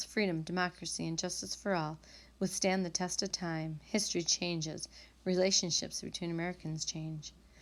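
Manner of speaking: ordinary talk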